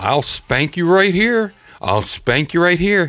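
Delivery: scolding parent yell. Retelling how a man outside a store yelled at his kid: imitating a man yelling at his kid. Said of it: "he's yelling at his kid".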